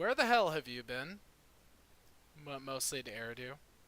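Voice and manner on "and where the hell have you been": loud, pointed, dripping sarcasm. Game narrator voicing a drow greeting the party, sarcastic. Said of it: "he just kind of sarcastically says".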